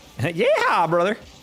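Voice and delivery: put-on Texan accent. A streamer talking to chat shows off a texan accent. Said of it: "That's my Texan accent".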